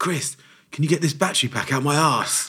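high, full-volume shout at top of lungs. Retelling a staff member calling to a manager: imitating someone shouting at full volume. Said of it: "shouts at the top of her voice".

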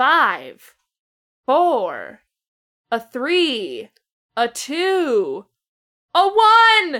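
very loud, very slow count, word two stretched out. Counting down for viewers to press play together: slow countdown. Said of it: "I did that countdown really slowly".

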